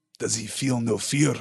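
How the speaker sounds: muttered, mumbling voice. Narrator reading a line spoken by the dwarf in the story, muttered. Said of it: "Muttered the dwarf".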